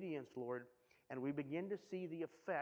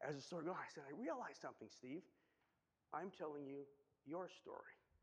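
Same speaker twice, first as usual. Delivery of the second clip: soft, mock choking up partway through; 6 dB quieter than usual. Speaker addressing Steve while sharing a story, getting choked up. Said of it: "I'm really getting choked up".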